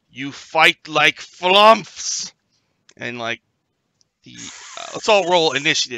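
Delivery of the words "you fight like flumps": very slow, loud, booming, drawn-out room-filling yell. Voicing someone up in the room who yells at the group: booming yell. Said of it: "a voice like booms through the room ... yell".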